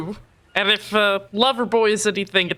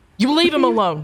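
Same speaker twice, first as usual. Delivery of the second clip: furious character voice, higher pitch; 3 semitones higher than usual. Voicing a character pinning someone against a car: furious in-character threat. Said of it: "she's just pissed as fuck".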